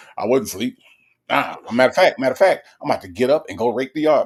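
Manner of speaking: stubborn, insistent, defensive tone. Retelling how a mom insists she was not asleep: imitating mom insisting. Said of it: "she just be like".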